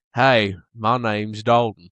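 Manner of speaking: very slow, low, put-on western drawl. Teasing a friend about talking to girls in Australia, imitating him in a westerned-up accent. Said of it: "did you kind of western it up a little?".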